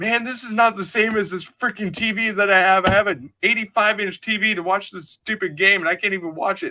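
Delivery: high-pitched angry rant. Retelling a friend's complaint after the Wi-Fi cut out: imitating someone angry. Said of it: "And he was all pissed off".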